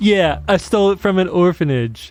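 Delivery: dry sarcastic tone. Teased repeatedly about stolen money, a man answers his mockers sarcastically. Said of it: "he said sarcastically".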